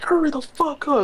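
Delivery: put-on very high, shrill, impatient screaming. Retelling a woman yelling at him on the phone, imitating her screaming. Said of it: "but she was screaming".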